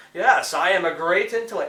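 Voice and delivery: arrogant, smarmy, superior-sounding delivery. Describing a game villain on the radio: arrogant smarmy Riddler voice. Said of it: "really arrogant and smarmy and going".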